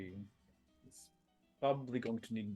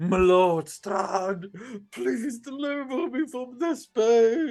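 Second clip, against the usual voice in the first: pained scream, much higher and louder; 14 semitones higher, 17 dB louder than usual. The head of Radin cries out to its lord: Radin's head screaming in pain. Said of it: "the head of Radin like screaming like".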